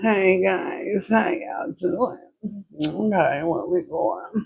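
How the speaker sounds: slow, drowsy drawl. Retelling how the Uber driver greeted them: imitating half-asleep talking. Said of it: "she was talking so, like, she was asleep".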